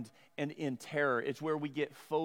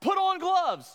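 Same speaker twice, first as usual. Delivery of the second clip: very loud, high-pitched, shrill yell; 8 dB louder than usual. Retelling a weird dream about a huge lizard, imitating own yell. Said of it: "I just yelled out".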